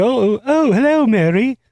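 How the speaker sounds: put-on, posh, austere accent, high and slow. Quoting a character from a comedy film: imitating a fake austere accent. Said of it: "fake austere accent".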